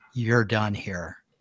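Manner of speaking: whispered threatening tone. Voicing a character choking someone, whispering in her ear. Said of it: "I'll be whispering in her ear".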